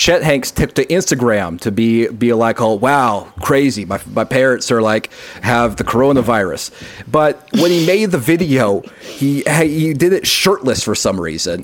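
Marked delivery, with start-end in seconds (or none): none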